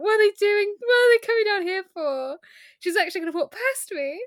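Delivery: flustered, high voice. Retelling a scene where Marius panics as a pair approaches: flustered Marius voice. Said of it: "Thrown into confusion".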